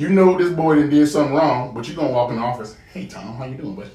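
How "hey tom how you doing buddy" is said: very quiet, hushed, exaggerated polite put-on voice.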